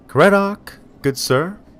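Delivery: very high eager voice. Narrator reads a resident calling out to an approaching visitor, high voice. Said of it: "calls out in a high voice".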